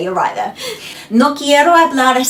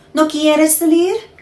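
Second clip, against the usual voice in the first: pitch rising on salir, question-like tune; 4 semitones higher than usual. Demonstrating a Spanish sentence as a question, question intonation. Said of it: "Or question".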